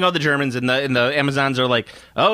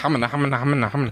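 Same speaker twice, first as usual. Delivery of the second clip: put-on comedian gibberish voice, pitched lower; 4 semitones lower, 3 dB quieter than usual. Retelling a scene where a character turns into Charlie Callas: Charlie Callas impression. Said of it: "he turns into Charlie Callis for a little bit".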